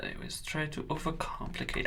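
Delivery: very quiet, breathy, whispered German accent. Talking about always overcomplicating things, in a German accent. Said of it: "I just switched to a German accent".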